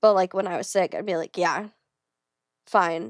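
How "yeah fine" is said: put-on flat, toneless, no-energy voice. Speaker acts out how they answered people while sick, imitating own flat reply. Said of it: "have no energy to put any personality into it".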